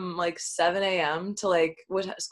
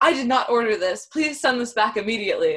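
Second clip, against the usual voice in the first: stern, scolding yell with voice raised; 4 semitones higher, 4 dB louder than usual. Retelling how Miss Kwan answered the delivery guy, imitating Miss Kwan yelling. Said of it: "she's yelling at the delivery guy like you would yell at a student".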